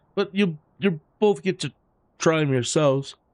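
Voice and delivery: speaking through a yawn. Signing off, the speaker thanks a guest and the audience, yawning. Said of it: "I don't know why I'm yawning".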